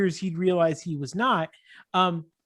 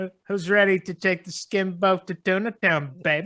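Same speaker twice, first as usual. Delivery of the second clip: put-on smug comedian voice. Quoting a movie line as if said by Dennis Miller: Dennis Miller impression. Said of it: "that's a pretty good impression".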